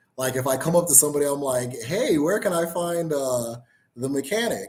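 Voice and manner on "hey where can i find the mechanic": polished, proper, sing-song voice.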